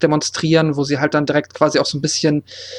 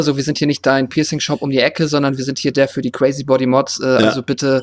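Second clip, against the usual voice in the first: plain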